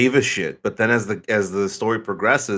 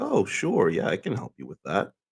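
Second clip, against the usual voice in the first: a little softer, gentle, helpful-sounding voice; 6 dB quieter than usual. Imitating how a man sometimes sounds when offering help, a little softer voice. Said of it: "his voice goes a little softer".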